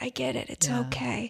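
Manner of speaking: mock feeble delivery. Retelling own reply to someone who apologized: imitating saying it weakly. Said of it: "very weakly said".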